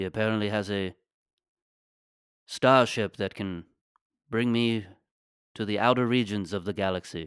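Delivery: put-on old English man voice. Improvising a bit about Obi-Wan Kenobi lost in the Bronx: Obi-Wan Kenobi voice. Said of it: "It's just Obi-Wan Kenobi in the Bronx".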